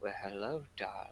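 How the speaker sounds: very quiet, hushed, soft whisper, close up. A slender hand wraps around the listener's shoulder, then a soft whispering voice. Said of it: "you hear a soft whispering voice in your ear".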